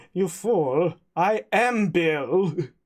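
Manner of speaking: put-on German officer accent. Playing someone who claims to be Bill, in a Colonel Klink voice. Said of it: "Bill didn't sound like this".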